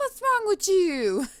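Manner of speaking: high-pitched, slow, offended tone.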